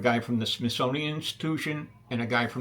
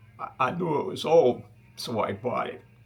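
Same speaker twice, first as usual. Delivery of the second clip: put-on speaking in an elderly grandfather voice. Quoting a favorite phrase, imitating his grandfather. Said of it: "I'm going to do an impression of my grandfather here".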